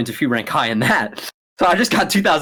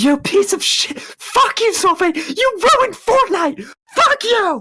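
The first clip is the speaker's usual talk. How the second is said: shrill, very high-pitched, enraged screaming. Retelling past screaming at someone over a video game, re-enacting furious screaming. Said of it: "I'm fucking screaming at him".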